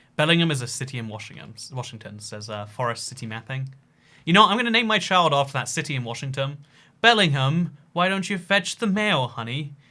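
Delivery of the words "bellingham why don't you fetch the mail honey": put-on posh voice, fancy upper-crust manner. Joking about naming a child after a Washington city, in put-on posh voice. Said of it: "my impression of fancy people".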